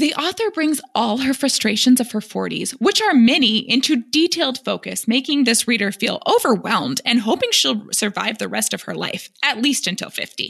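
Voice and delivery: mocking, put-on imagined voice. Reading a book review aloud, in the reviewer's imagined tone. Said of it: "read the review in the tone of voice I think it was written".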